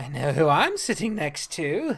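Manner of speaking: lilting sing-song tone. Reading a character's line aloud from a story: sing-song voice. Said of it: "He puts on a sing-song voice".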